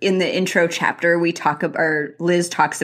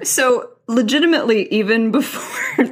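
talking through laughter, higher; 5 semitones higher than usual. Starting to comment on a book cover description, laughing while talking. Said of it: "I'm laughing over legit, hot for".

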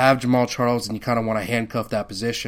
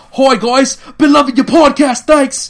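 very loud, very high, shrill put-on Australian accent; 13 dB louder than usual. Reading out a listener's message from Brisbane: Australian accent. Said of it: "I'm reading it in an Australian accent, so it's more like".

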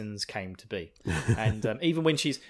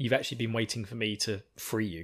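ordinary delivery

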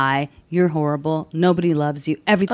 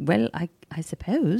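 put-on British accent; 6 dB quieter than usual. Retelling a phone call with a puppy seller: imitating British accent. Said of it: "He was a British guy".

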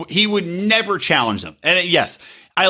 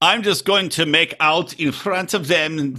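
put-on German accent, much slower. Voicing a woman's thoughts while retelling a scene, in a german accent. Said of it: "I don't know what accent I'm doing again. German".

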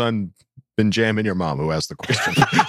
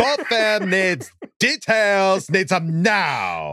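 high, exaggerated, over-the-top Valley Girl voice; 9 semitones higher than usual. Reading out a listener question to the others: valley girl voice. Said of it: "The Valley Girl".

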